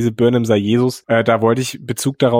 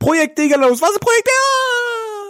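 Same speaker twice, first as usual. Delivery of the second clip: very high-pitched scream, rising in pitch. Retelling a character's line from the end of an episode: imitating someone shouting. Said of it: "ganz am Ende noch schreien".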